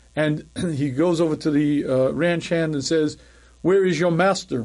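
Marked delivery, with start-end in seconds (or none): 3.7-4.7 put-on English gentleman's British accent. Retelling a story of an English fellow at a ranch, British accent. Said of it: "in British accent".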